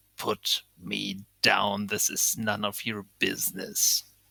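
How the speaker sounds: gruff, low, rough growl. Voicing a character held up by the neck, telling the player to put him down: growling. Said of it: "he just growls".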